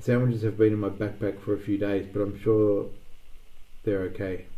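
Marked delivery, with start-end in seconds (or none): none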